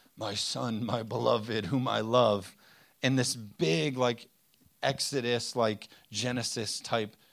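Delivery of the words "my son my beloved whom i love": deep, slow, drawn-out divine voice. Speaking to an audience about seeking God, deep voice of God. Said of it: "God in this deep voice says".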